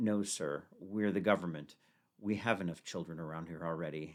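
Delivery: put-on flat deadpan tone. Retelling a government employee's reply to his question, in a put-on deadpan. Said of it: "very deadpan".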